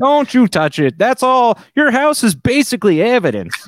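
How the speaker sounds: put-on high-pitched Chicago cop voice with Chicago accent. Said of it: "I only do this Chicago voice for a cop".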